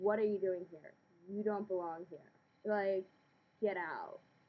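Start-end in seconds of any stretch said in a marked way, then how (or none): none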